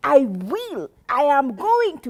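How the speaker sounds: assured, slow. Demonstrating speaking with confidence instead of hedging, confident. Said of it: "just like confidence in how you speak".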